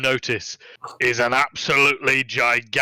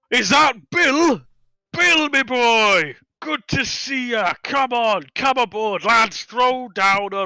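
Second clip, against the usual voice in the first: tremendous, very high, booming shout; 11 semitones higher, 4 dB louder than usual. A game master voices a man greeting an old friend aboard: yelling tremendously. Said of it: "suddenly yells out tremendously".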